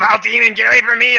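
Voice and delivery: very high, loud, shrill, frantic panicked scream. Voicing a panicked prisoner driving someone off: screaming in panic. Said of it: "he starts fucking screaming and fucking freaking out".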